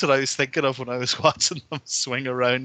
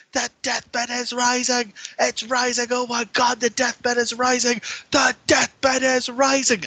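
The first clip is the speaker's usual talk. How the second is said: mock very high, shrieking sports announcer screaming; 11 semitones higher, 3 dB louder than usual. Acting out the wrestling call as the deathbed slowly lifts, imitating Mike Tenay screaming. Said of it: "But Mike Tenay is screaming".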